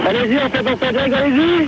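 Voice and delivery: high-pitched calling-out voice.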